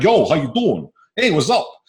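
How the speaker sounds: put-on New York Brooklyn accent. Speaker who picks up others' accents greeting a guy from brooklyn, brooklyn accent. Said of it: "the guy from Brooklyn will come up".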